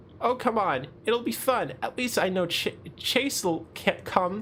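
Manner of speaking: high-pitched, bubbly voice. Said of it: "I can never get her voice right".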